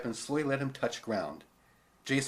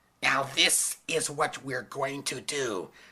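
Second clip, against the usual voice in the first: demanding, scratchy, strangled shrieking voice. Reading a story, a teacher threatening a boy: demanding scratchy shrieking voice. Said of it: "in the demanding, scratchy voice".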